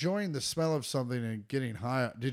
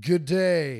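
very loud, put-on southeastern French accent; 8 dB louder than usual. Showing off an impression on request, in a southeastern french accent. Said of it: "You want to hear my southeastern French?".

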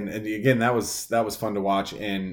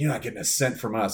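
mock pissed-off, angry, dismissive tone. Retelling how a pissed-off woman answered, imitating an angry woman. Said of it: "She was pissed dude".

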